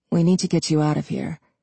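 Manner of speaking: plain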